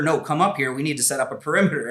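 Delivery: loud urgent screaming. Retelling screaming back to her during a firefight: retelling own screaming. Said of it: "I start screaming to her".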